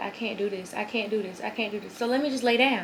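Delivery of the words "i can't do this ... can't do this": usual speaking voice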